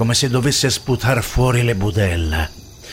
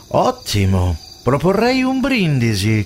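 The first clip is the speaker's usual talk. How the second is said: lightly mocking, teasing, swooping sing-song; 3 semitones higher than usual. The narrator replies to the other man's reassurance, teasing a little. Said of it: "controbatto sfottendolo un po'".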